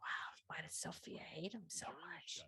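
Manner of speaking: hushed, barely voiced, very quiet whisper. Whispering to a fellow character while others talk nearby: whispering. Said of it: "I'm whispering to Jupiter".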